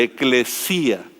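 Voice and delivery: eclesía with the stress on the í. Explaining the Greek word eclesía, with stress on the í in eclesía. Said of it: "con el acento en la i".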